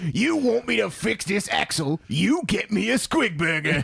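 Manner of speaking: rough, slow monster voice. Describing an orc mech boy called Hungry, the speaker voices him: Hungry orc voice. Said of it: "And they all have the same voice".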